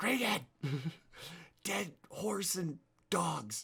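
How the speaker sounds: whispered shout. Player calling out to get someone's attention in the game, whisper yell. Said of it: "You know that like whisper yell".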